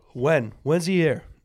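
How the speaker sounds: aggressive, forceful delivery. Asking another speaker when a comedian will be in town: said aggressively. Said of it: "I don't know why I said it aggressively".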